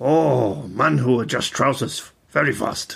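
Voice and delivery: put-on wise old man voice with Japanese accent. A line required in an old, wise japanese man's voice: put-on accent. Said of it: "they had to be said in the voice of an old, wise Japanese man".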